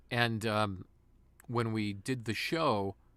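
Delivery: ordinary delivery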